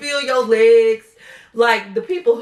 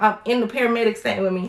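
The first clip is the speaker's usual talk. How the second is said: ordinary delivery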